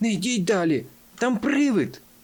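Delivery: crying out in fright. The fox pulls his friends back in a read story, crying out in fright. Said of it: "Раптом він скрикнув".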